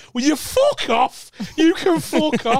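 very high, dragged-out yell. Retelling telling friends to stop consoling a liar: retelling own scream. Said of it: "You just hear me scream".

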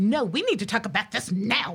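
play-acted heated, urgent, angry, insistent tone. Retelling own past demands to a husband who shuts down: imitating own past angry self. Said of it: "I used to get angry about that and be like".

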